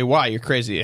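normal talking voice

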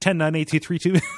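mock panicked rushed counting. Retelling how a scared man counts down from ten, acting out terrified fast counting. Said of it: "He says it too fast because he's just terrified".

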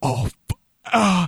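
hammy, high, cut-off goofy death cry. Retelling a movie scene where an actor gets shot: imitating an actor getting shot. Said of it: "Wade Williams just kinda, like, go".

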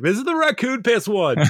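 cheerful, proud, high-pitched character voice.

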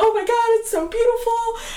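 gushing near tears. Retelling seeing the cake the girl brought out, retelling tearful gushing. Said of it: "go to start crying".

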